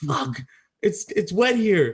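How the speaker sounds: loud, high-pitched screamed delivery. Retelling a wet night in the tent: imitating Nevi screaming. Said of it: "all I heard D V scream was".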